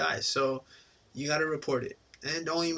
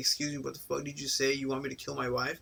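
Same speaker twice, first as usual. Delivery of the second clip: mock aggressive, threatening, confrontational voice. Doctor imagining a patient getting in his face, imitating an aggressive patient. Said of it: "trying to beat me up".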